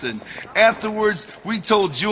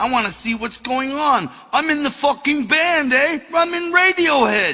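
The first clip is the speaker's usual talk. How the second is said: shoddy put-on English accent, pitched up; 9 semitones higher than usual. Retelling what an intruder said back: shitty English accent. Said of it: "my, uh, shitty English accent".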